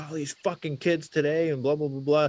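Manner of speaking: heated angry rant. Retelling a stranger at a gas station ranting about kids: imitating a man screaming angrily. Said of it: "he's screaming and yelling".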